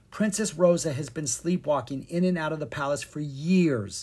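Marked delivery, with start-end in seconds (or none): none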